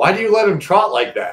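very high, shrill, shouted holler. Retelling what someone walking by shouted across: imitating Amelia shouting. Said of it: "she shouts".

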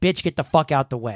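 put-on impolite, rude-sounding voice. Imitating Steph telling a shopper to move: imitating Steph, not polite. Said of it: "Steph wouldn't be. Steph would just be like".

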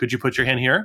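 very calm, neutral tone. Recalling repeating a request to people ignoring them, retelling a calm, neutral tone. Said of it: "in a very neutral, calm tone of voice".

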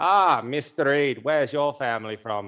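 put-on plummy, old-fashioned 1950s Australian gentleman accent. Imitating a posh old gentleman asking about the speaker's surname, old 50s Australian voice. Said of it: "like that old 50s Australian voice going".

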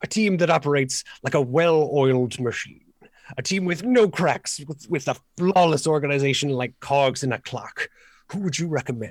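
grandiose, persuasive, scheming scholar character voice. Game master voices a scholar hiring the adventurers: polished, grandiose NPC voice.

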